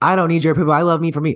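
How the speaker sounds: very, very fast, high, rattled-off rush of words. Retelling a cast member's tagline as if read from a script: imitating Lisa Barlow, very fast. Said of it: "very, very fast".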